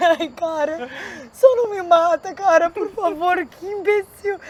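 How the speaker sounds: acted talking while laughing. Retelling a fight in the car that turned into laughter: retelling talking while laughing. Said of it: "a gente começou a rir. E falando assim".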